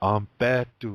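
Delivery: Ampetu with stress on second syllable pe. Language lesson, the word meaning day: stress on second syllable of ampetu. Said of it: "Accent on the se- second syllable".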